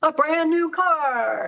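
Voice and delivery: very slow, high, drawn-out game show announcer voice. Describing a golf tournament prize, announcing it in your game show voice. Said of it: "My game show voice".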